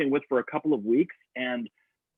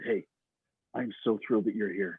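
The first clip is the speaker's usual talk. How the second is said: put-on tough-guy villain voice, lower and quieter; 3 semitones lower, 5 dB quieter than usual. Recounting a man who stood up close and greeted him, the speaker is imitating John. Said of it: "that's how John talks. He's like a big bad guy".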